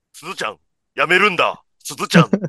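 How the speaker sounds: stilted, toneless, flat and wooden delivery. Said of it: "めちゃくちゃ棒読みの".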